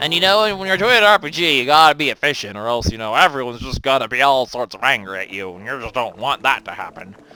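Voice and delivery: loud, put-on creepy old man voice. Gamer explaining RPG efficiency to video viewers, in a creepy old man voice. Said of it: "I'm talking like a creepy old man right now".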